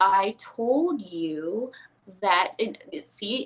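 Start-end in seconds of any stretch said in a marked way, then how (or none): 0.0-2.5 very slow, pointed, aggressive delivery. Showing how an upset girl slows her speech: slow, aggressive speech. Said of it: "starts slowing down her speech ... even that is very aggressive".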